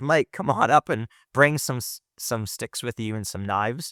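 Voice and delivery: ordinary delivery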